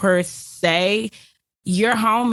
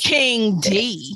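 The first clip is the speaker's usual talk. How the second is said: radio dj voice. Joking during a conversation about beehives and entrepreneurs: DJ voice. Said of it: "Did she really throw her D J voice?".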